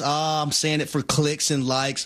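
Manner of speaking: normal talking voice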